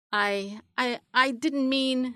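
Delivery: stammering, stuttering, faltering, halting delivery. The narrator reads Lizard answering Dog's complaint about being called lazy, stammering. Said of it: "stammered Lizard".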